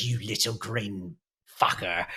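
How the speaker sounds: put-on woman character voice. Voicing a nearly naked tattooed woman cursing at the player's character: voicing the tattooed woman. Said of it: "She looks at you and she goes".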